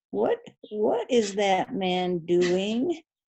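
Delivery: slow, unhurried woman's voice. Retelling a hiker's question on a bridge, imitating a woman's voice. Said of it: "I'll kind of imitate her voice".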